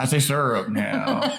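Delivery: mocking a teen trying to sound cool. Teasingly repeating the other speaker's words: imitating a teen trying to sound cool. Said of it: "why did you look like a teenager trying to, like, sound cool?".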